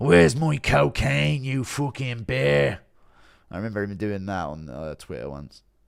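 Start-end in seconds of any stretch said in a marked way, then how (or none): 0.0-2.8 rough, pitched-up put-on voice, drawn out. Answering a chat request for an impression: Conor McGregor impression. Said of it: "Impression of your favorite McGregor voice note".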